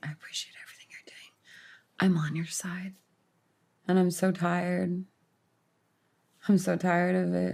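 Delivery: hushed, quiet, confiding, as soft as possible. Retelling what an actress said at a fan expo, imitating her speaking low. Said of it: "speaking as lowly as she could".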